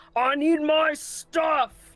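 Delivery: giant's huge, booming, high yell. Narrating a scene as a huge red creature yells down over the canyon: huge booming yell. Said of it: "You hear this huge booming voice yell out".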